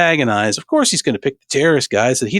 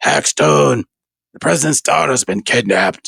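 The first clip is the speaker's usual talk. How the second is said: rumbling, gravelly voice. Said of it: "That's his voice".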